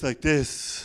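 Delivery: low, deep, airy, breathy voice. Showing a technique taught for a stammer, deep, breathy voice. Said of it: "we're encouraged to speak in a deep and breathy tone of voice".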